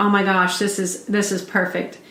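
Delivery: ordinary delivery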